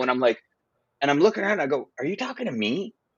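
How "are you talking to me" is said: mock-shocked, quieter and higher. Retelling being confronted by a man in a line, retelling a shocked reply. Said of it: "But I was just so shocked".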